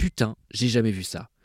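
normal talking voice

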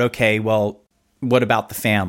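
plain

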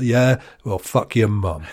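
mocking, put-on smug American man's voice. Mocking an imagined six-foot-four american guy: imitating a smug american guy. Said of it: "He's like".

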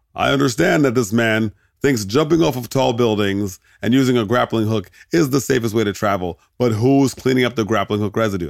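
ordinary delivery

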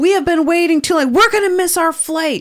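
put-on male shouting. Retelling how a man in a long line shouted at everyone: imitating a man shouting. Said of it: "he shouts to, like, the world".

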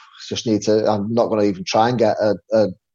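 ordinary delivery

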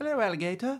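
put-on, fake English accent, very high and soft. Podcast host greeting his co-host from across the pond, fake english accent. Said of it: "your other personality that's apparently English".

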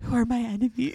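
put-on whispering. Recounting a scene where a woman looks at Danielle and whispers; retold whisper. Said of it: "then whispers".

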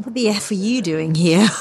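acted-out cranky, comic grumbling outburst. Retelling how Roly reacted when she turned up early: imitating Roly, grumpy. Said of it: "sort of really grumpy and very funny".

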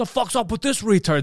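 overly aggressive, confrontational. Showing how not to bring up a topic abruptly: too aggressive. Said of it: "Then it's too aggressive".

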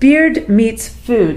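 very slow, deliberate, spelled out letter by letter.

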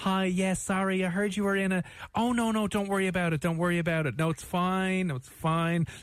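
high, slow, meek, apologetic, backing-down manner. Retelling how the same colleague then apologised on the phone: imitating an apologetic phone call. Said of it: "the most typical Irish thing".

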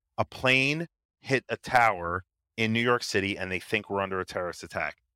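ordinary delivery

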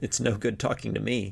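with a chuckle. Narrator reads Kettle's line to a woman he can't understand, chuckling. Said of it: "Kettle chuckled".

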